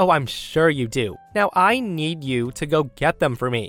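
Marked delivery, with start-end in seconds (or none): none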